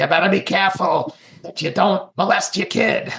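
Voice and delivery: put-on cranky, crotchety old man voice, New York accent. Picturing a thought as an old man on a park bench, crotchety old New Yorker voice. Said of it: "this old crotchety guy from New York City".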